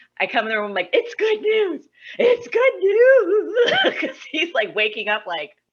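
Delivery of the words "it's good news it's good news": put-on crying voice, higher and louder. Retelling waking someone up with good news: imitating own crying.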